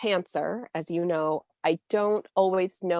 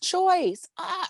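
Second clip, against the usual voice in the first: put-on scream, higher; 12 semitones higher than usual. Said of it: "I was screaming like".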